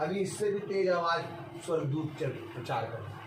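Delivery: low, very soft voice.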